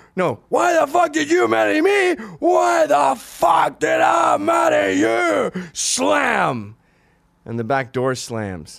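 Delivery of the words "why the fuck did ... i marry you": very high, loud, ragged, furious, shrill, raw screaming. Retelling a parents' fight, imitating mother screaming. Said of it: "she'd be screaming".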